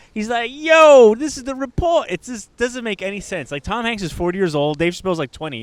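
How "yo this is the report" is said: loud, high-pitched slangy street voice.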